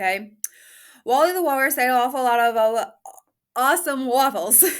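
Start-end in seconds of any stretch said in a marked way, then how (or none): 1.0-4.6 loud, rushed, fast, rattled-off delivery. Attempting a tongue twister at speed, fast. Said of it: "I cannot say this fast, but I'm going to give it a try".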